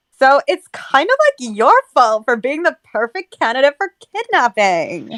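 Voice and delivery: put-on swooping valley girl accent. Rereading a line after another speaker asks for it: Valley Girl voice. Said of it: "a Valley Girl voice".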